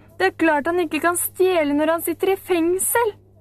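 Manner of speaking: scornful, mocking jeer. Narrator reading Storpeder's reply to Camilla in a story; sneering. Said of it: "Storpeder smilte hånlig".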